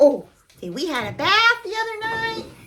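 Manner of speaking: high, cutesy pet-talk voice. Vlogger still talking after the dog is down on the ground, dog voice. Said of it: "I'm still talking in the dog voice".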